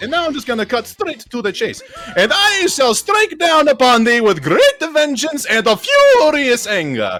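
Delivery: loud, booming, swooping animated cartoon character voice. Speaker cutting straight to the chase, performing in a Mario voice. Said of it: "I'm first trying to get into my Mario voice".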